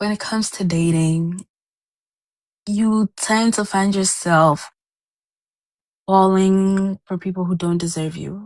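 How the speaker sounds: fighting back tears, near crying. Speaking to the group about their father and dating: holding back tears. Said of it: "I'm trying not to cry".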